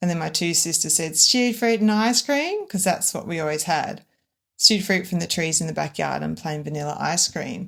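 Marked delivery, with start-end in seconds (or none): 1.1-2.6 high-pitched, mock taunting, piss-taking tone. Retelling how the sisters answered their mum about dessert; imitating mocking sisters. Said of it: "they were taking the piss of my mum".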